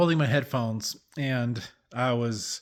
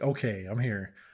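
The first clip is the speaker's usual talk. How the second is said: mock exasperated, put-upon, low, annoyed mutter; 4 semitones lower, 5 dB quieter than usual. Speaker retells walking into the room after feeling prompted to pray, retelling an annoyed tone. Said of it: "I shouldn't use that tone of voice".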